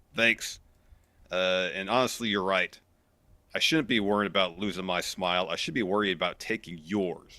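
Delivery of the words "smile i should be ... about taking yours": normal talking voice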